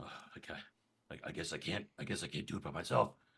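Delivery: breathy, whispered mutter under the breath. Voicing a character focusing before an attack, muttering under his breath. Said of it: "kind of under his breath mutters".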